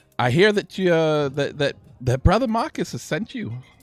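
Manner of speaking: loud, high attempted Scottish accent. In a scene, greeting someone sent by brother marcus, in an attempted scottish accent. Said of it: "I was trying to go for a Scottish accent".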